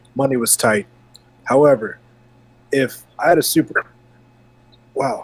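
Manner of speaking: speaking while hiccuping. Talking about childhood game consoles, the speaker talks through hiccups. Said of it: "I'm so sorry about the hiccups".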